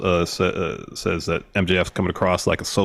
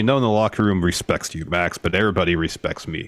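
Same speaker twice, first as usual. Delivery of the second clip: ordinary delivery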